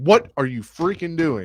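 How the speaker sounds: put-on yelling. Retelling reacting to a pick while sitting at the bar: retelling own yelling. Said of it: "yelling and cussing".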